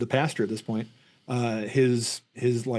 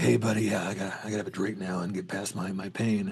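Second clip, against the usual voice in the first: hard-boiled, film-noir-style talk; 3 semitones lower, 4 dB quieter than usual. Retelling a scene staged like two guys at a bar: imitating film noir bar talk. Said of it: "staged like it's two guys at a bar, like they're in a noir".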